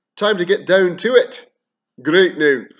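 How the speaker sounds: accent from Cairns. Starting a video on a kingdom's lore: best Cairnian accent. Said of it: "in my best Cairnian accent now".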